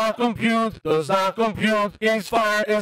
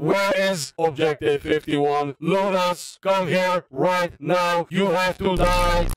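robotic, machine-like voice; 3 semitones lower than usual. Gamer hunting down other players, robot voice. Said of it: "with the robot voice".

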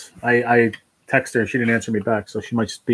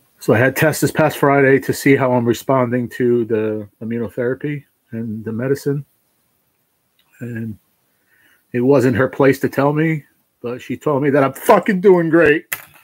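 weeping, tearful, crying with joy; 3 semitones higher, 4 dB louder than usual. Sharing good test results with an audience, crying tears of joy. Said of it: "I'm crying tears of joy".

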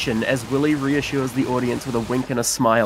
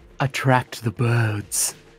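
dropping the voice, speaking lower. Reading a character's speech aloud, in a lowered voice. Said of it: "lowers his voice".

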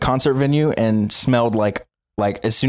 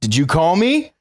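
mock stern dad tone, pitched up; 6 semitones higher than usual. Retelling how the sound guy came up to him and asked this, imitating a dad-like tone. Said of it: "Just like that. Like my fucking dad or something".

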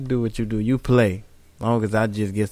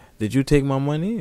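mock joking tone, higher pitch; 3 semitones higher than usual. Retelling how she asked about her missing money, imitating her joking.

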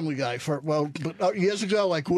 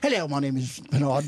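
put-on English accent, much lower; 4 semitones lower than usual. Asked by others to do a voice, introducing himself in an English accent. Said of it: "because I like English people".

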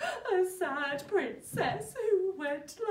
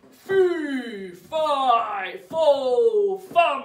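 big, deep, booming, very slow giant voice; 7 semitones lower, 7 dB louder than usual. Telling listeners the story of a hungry giant, in a big booming giant voice. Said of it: "can you use a big giant's voice?".

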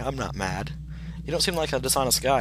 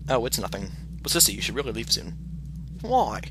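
ordinary delivery

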